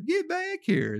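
very high, slow, panicked shrieking woman's voice.

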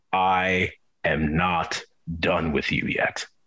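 extremely low put-on voice. Retelling what a thing said to him while he was petrified, very deep voice. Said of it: "deeper than James Earl Jones on his best day voice".

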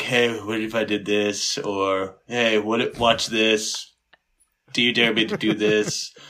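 mock muttering under breath. Showing what they say around the ladies: imitating muttering under breath. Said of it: "I'm always speaking under my breath around them".

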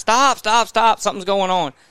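mock screaming, high-pitched, put-on. Retelling calling to riders ahead after a fall: retelling own screaming. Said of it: "so I start screaming up ahead".

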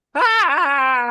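shriek. Answering the game master's request for a scream sound: scream. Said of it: "Make a scream sound".

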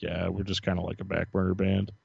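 put-on sad tone. Retelling what he said about his band: imitating a sad remark. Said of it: "just how sad he said it".

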